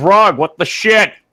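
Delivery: high-pitched shouted yell, voice rising up high. A player in a game, in character, tries to talk to Grug, yelling. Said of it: "I'm like yelling".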